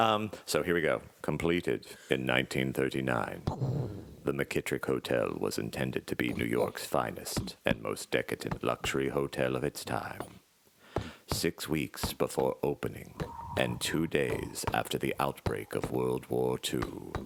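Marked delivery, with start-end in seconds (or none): 1.2-17.1 dark, foreboding, very ominous dramatic narration. Reading a hotel preview text aloud to set a tone: very ominous reading. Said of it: "I'm gonna say it very ominously".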